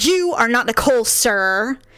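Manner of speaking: put-on curt, slow, sharp snapping. Retelling a teacher's sharp reply to a student: imitating a snapped retort. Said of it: "I snapped at them".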